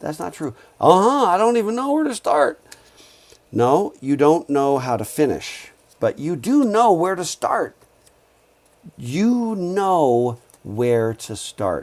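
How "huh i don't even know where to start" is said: very high, rushed, overwhelmed exasperation, acted out. A lecturer retells what students said to him, mimicking an exasperated student. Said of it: "this is what they sounded like".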